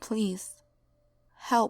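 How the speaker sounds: softly spoken voice. Narrator reads the voice heard on the tape recording: very quiet voice. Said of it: "Then a very quiet voice said".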